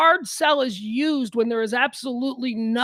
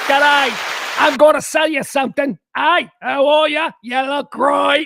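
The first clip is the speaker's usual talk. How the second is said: put-on, slick con-man Australian salesman accent; 3 semitones higher, 7 dB louder than usual. Describing how the Australian accent sounds, demonstrating a con-man Australian accent. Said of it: "the Australian accent sounds con manny".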